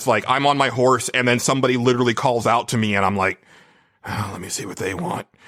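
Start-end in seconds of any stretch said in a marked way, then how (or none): 4.0-5.2 gruff, quiet mutter under the breath. Describing answering a side-quest call on horseback, in a gruff Geralt voice. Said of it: "gruff uh, Geralt voice".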